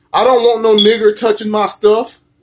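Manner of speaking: ordinary talk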